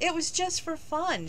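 high, halting, stammering speech. Asked why he taught her, she answers him, stammering. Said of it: "she stammered".

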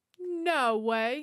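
normal talking voice

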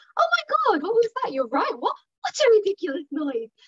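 put-on big, high, swooping, upbeat children's TV presenter voice. Showing how to react when the dogs hear a strange noise, in an upbeat kids tv presenter voice. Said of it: "Big TV presenter voice".

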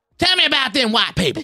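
put-on cartoon rooster drawl. Imitating Brian Dixon, who sounds like Foghorn Leghorn crossed with Cartman. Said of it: "he sounds like Foghorn Leghorn, like, if you fuck Cartman".

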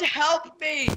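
small, contained, held-back yell. Recalling yelling into the microphone: retelling own yell. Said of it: "And I yelled".

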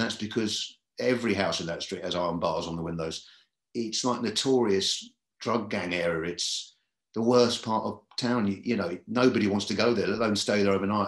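ordinary talk

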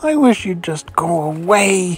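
hissing, away stretched long. A narrator reads a girl in bed in the dark, hissed at the frog. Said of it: "she hissed into the darkness".

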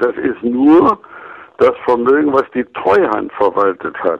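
nur strongly stressed. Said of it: "ich betone mal ausdrücklich".

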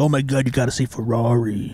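play-acted ranting, raving gush, slow and drawn out. Mocking how people would rave about a film: mock ranting and raving. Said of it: "ranting and raving about".

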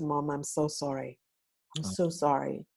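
plain

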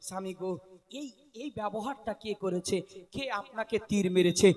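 low, soft, tender voice.

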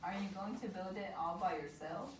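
ordinary delivery

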